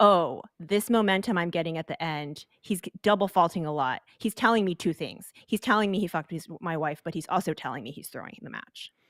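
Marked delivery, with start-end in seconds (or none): none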